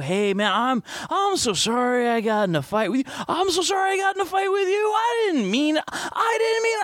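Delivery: very high, mellow, laid-back, easygoing, low-key tone. Retelling an in-character apology made after being calmed: imitating a low-key, mellow voice. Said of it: "really low-key, mellow".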